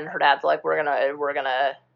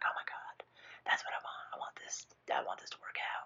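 hushed, breathy whisper. Retelling a character's wish from a movie: imitating someone whispering. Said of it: "Why do you whisper?".

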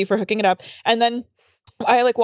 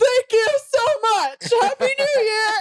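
put-on very high, weepy crying; 13 semitones higher than usual. Telling how you answered someone from your comedy show, retelling thanks while crying. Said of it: "And I'm like crying".

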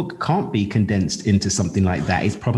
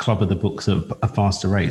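normal talking voice

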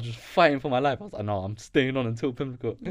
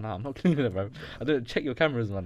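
usual speaking voice

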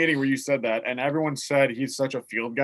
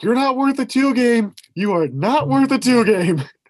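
very high, loud, slow, drawn-out yelling, repeated; 10 semitones higher, 7 dB louder than usual. Retelling a confrontation with an opposing player: imitating someone yelling. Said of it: "I just kept yelling".

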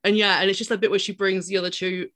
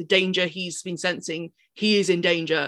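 ordinary delivery

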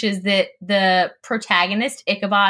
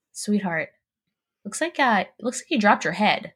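put-on solemn, earnest, dead-serious tone, quick delivery; 4 dB quieter than usual. Retelling what their dad used to say to them and their sister, imitating dad's serious tone. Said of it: "in a very serious tone and say".

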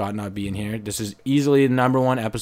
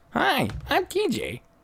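very high, very slow, drawn-out voice. Answering a suggestion to do both hosts' voices: TJ impression. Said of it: "That was pretty close".

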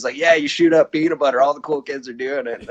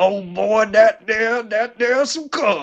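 put-on old man voice, much higher; 8 semitones higher than usual. Asked to say it again, now in the grandpa's voice. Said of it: "Now do it in the grandpa's voice".

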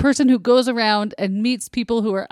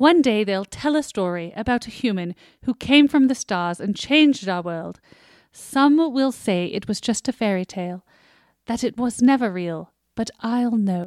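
put-on British accent. A speaker voices a character whose actor is British, British voice. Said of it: "so I'll do a British voice".

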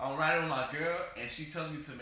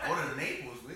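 ordinary talk, nothing marked

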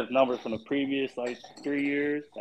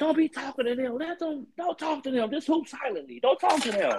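put-on, very high-pitched screaming; 14 semitones higher than usual. Retelling how people yell at players on TV: imitating people screaming at the TV. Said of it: "people be screaming at the T V like".

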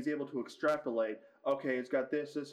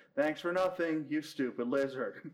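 completely deadpan delivery, no reaction. Retelling the funniest line in a movie, imitating Hiccup's deadpan. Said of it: "Hiccup just deadpans".

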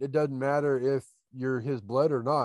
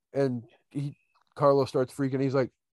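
ordinary talk

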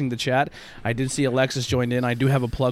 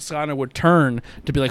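ordinary delivery

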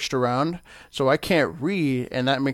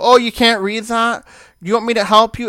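helpful, loud, pitched-up voice projected to a room; 9 semitones higher, 8 dB louder than usual. Retelling what people ask about reading: imitating someone saying it loudly. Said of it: "they say it really loud".

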